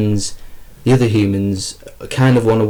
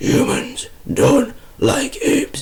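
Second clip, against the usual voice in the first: terrible put-on ape voice; 3 dB quieter than usual. Explaining the apes' side of their conflict with humans, in a bad ape impression. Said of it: "Sorry for my terrible impression".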